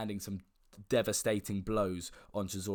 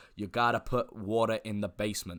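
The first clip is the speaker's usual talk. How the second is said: bad put-on American accent, louder; 4 dB louder than usual. Quoting a boxing trainer's saying about the fight: bad American accent as Teddy Atlas. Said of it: "That's probably the worst American accent".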